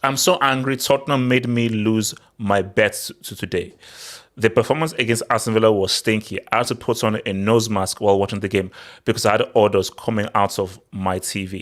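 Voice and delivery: ordinary delivery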